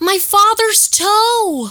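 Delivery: very high, shrill, loud squeal, toe stretched long. Showing one impression of a line from Moody's Point: Amanda Bynes impression. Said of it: "I can do one Amanda Bynes impression".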